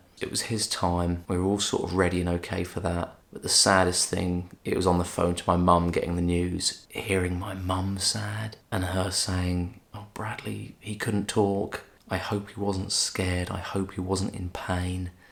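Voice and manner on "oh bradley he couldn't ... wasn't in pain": plain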